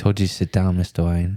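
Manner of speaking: put-on butler accent. Repeating a friend's line to Mister Wayne, imitating Alfred's accent. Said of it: "it's Alfred".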